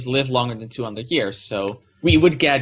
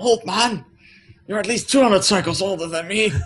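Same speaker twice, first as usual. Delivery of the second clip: put-on elderly man character voice, pitched up; 7 semitones higher than usual. In a role-play, answering being called old man, the speaker uses an old man voice. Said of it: "every old person that I try to voice".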